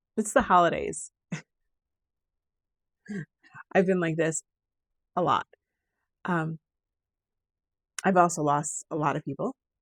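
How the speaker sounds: tearful voice, tearing up and choked. Speaker apologizes to listeners for tearing up during the holidays, voice choked. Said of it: "I'm sorry, I'm tearing up".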